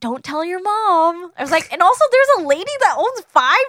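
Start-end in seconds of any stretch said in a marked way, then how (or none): 0.0-1.3 imitated whisper, higher. Retelling a movie scene where a woman talks to kids: imitating a whisper. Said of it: "she whispers".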